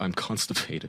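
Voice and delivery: half-whispered, hushed, breathy, shamefaced voice. Retelling answering a woman and man at the door, in a mock-ashamed voice. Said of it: "with complete shame in my voice".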